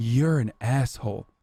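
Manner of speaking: muttered, half-whispered stage whisper. Retelling a dude confronting someone while shopping: imitating a quiet half-whisper. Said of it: "quietly being like".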